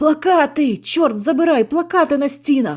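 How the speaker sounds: very loud, high-pitched shouting cry. After walking in silence, a friend is the first to cry out, shouting. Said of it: "першим закричав Сашко".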